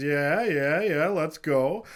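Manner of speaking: wild, loud carnival barker cry. Pitching a circus ringleader character on request: loud carnival barker voice. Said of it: "he's the carnival barker".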